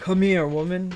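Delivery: voice dropped way down deep.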